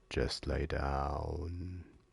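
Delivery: low half-whisper, "down" stretched long. Narrating a story where the apartment itself speaks to you, half-whispering. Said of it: "the apartment whispers to you".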